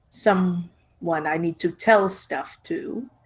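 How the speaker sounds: very slow, deliberate, drawn out word by word. Speaker voicing Gisora to the group, speaking very slowly. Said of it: "Gisora says that very slowly".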